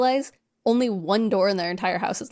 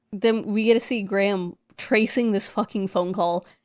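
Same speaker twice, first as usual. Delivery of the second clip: plain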